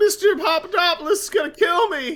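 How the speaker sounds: put-on squeaky, very high, crackly, voice-cracking teen voice. Asked to picture the burger-joint kid from a cartoon, the speaker voices him: crackly-voiced Simpsons teenager. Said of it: "the crackly voiced teenager".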